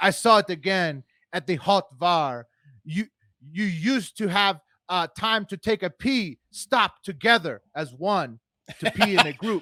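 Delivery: heavily put-on European accent, pitched a bit high. Reading Peter's remarks, translated to English, in a put-on European accent. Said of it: "the most European accent I've got".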